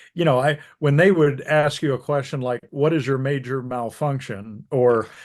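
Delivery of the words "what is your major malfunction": ordinary talk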